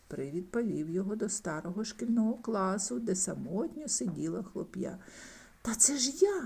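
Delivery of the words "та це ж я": high, astonished, surprised exclamation. Shown a boy sitting alone in an old classroom, a man speaks, surprised. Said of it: "здивувався Скрудж".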